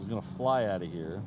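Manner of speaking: usual speaking voice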